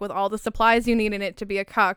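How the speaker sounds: normal talking voice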